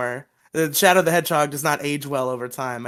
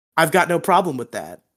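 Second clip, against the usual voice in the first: cool, badass action-hero delivery. Retelling a TV scene, imitating Trent: imitating a cool badass delivery. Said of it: "the sickest fucking cool-ass M L G sunglasses delivery".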